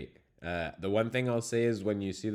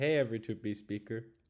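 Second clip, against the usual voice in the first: normal talking voice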